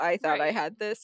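mock dejected, let-down, sad and deflated tone. Retelling a show scene where a character is caught: imitating a sad character. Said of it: "now it's like he's sad".

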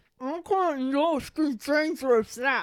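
very slow, muffled, garbled words with mouth full. Recapping the movie, repeating a character's line; imitating Ron with mouth full. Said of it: "Through a mouthful of food".

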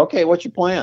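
high-pitched scream. Retelling what he screams at a guy on television, retelling a scream at the TV. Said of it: "I'm screaming at the TV".

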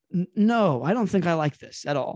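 plain

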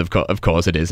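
ordinary delivery

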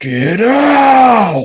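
shrill, very loud, high, stretched-out shout. Retelling a man's voice right by the ear: retelling a loud shout. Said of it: "really freaking loud".

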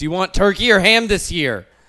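very loud, high, frantic, panicked voice. Retelling how their mom panicked the day before Thanksgiving, imitating panicked mom. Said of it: "would panic and be like".

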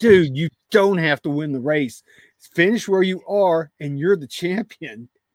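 mock shouting, loud yelling. Retelling what they shouted at the TV during the race: retelling screaming at the TV. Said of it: "I was screaming at the T V".

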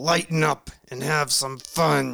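loud, heated, angry-sounding delivery. Podcast host mimics how they sounded reading the show's intro, mock-angry. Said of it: "I sound so angry in that intro".

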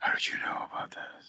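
hushed, breathy, low-key whispered action-hero voice. Describing the actress playing Charlie, the speaker quotes her in a Snake Plissken voice. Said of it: "she uses like a Snake Plissken voice".

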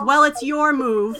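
irritated huff into the words, huffy and annoyed. Voicing a character who answers after a guest says he must leave: huffing, annoyed. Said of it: "she kind of huffs and she says".

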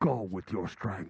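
very deep, booming, loud voice. Repeating a line just heard, doing it in a Darth Vader voice. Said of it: "he sounds like Darth Vader".

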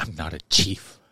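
angry, pissed-off tone. Retelling how a film character answered being called Chief: imitating an angry retort. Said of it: "He was pissed, bro".

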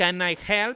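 high, put-on, attempted Mexican accent. Retelling what a lady said, imitating her put-on Mexican accent. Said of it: "she tries to make, like, an accent".

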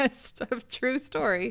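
speaking through laughter. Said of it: "I don't know why I'm laughing".

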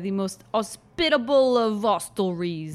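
put-on Cockney accent with every h dropped. Reading a game character's line aloud: Eliza Doolittle accent dropping H's. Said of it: "he speaks like Eliza Doolittle".

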